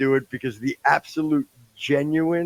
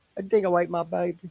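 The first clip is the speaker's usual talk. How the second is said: bad, put-on Southern accent; 4 semitones higher, 4 dB quieter than usual. Quoting a movie line, trying a Sissy Spacek impression: put-on Southern accent. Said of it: "I was trying to do Southern".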